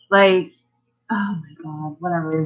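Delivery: ordinary talk, nothing marked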